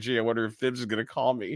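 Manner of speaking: laughing voice. Retelling a remark about expecting a late-night call: imitating someone laughing. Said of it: "he was kinda laughing like".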